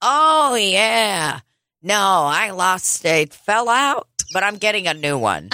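drawn-out high blurt. Retelling how a customer answered the waitress: imitating a loud exclamation. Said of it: "loudly exclaims".

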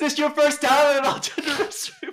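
very high, shrill, loud called-out shout. Retelling a video where a girl shouts at a man: imitating someone shouting. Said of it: "Just shouts at the first guy".

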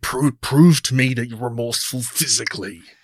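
growling, growly monster-man voice. Critiquing a villain, the speaker quotes his demand in a growly voice. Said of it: "he does a growly voice".

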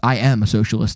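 put-on flat, dead-serious, low deadpan delivery. Retelling your reply to someone during a debate, imitating own deadpan reply. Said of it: "And I like deadpan".

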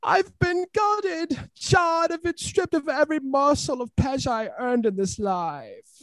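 very high, shrieking scream. Sharing a favorite quote, Moira's first line in the show, imitating Moira's scream. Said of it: "She screams".

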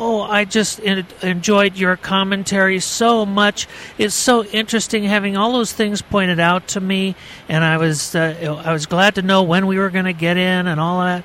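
put-on high, shaky, quavering little old-lady voice. Retelling an old lady praising the speaker's commentary; imitating a shaky little voice. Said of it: "in her shaky little voice".

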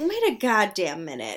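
ordinary talk

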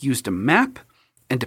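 ordinary delivery

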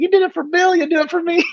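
put-on Illinois Southern accent.

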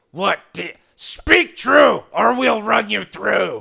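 very loud, rasping, rough goblin bark. Voicing the front goblin, who demands the truth: goblin leader speaking. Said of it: "the goblin in the front is looking at you and goes".

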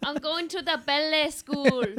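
butchered, high-pitched bad Geordie accent. Trying out an accent for friends, in a bad Geordie accent. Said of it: "You're butchering".

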